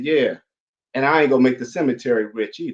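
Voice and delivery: ordinary talk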